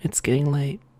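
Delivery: very soft, quiet talking. Talking softly to the viewers as a joke: talking really softly. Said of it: "we're gonna talk real softly right now".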